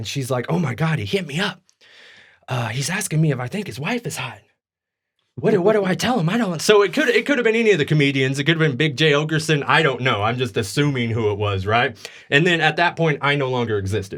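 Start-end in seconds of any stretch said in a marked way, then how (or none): 0.5-6.6 hushed, muttered, under-the-breath aside. Retelling what she said quietly to her friend: imitating someone talking under her breath. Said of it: "under her breath talking to her friend".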